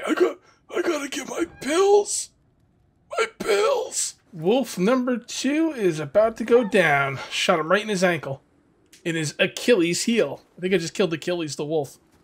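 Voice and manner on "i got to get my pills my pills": very high put-on old man voice. Narrating his own plans aloud, going home for pills, in an old guy voice. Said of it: "I sound like an old guy".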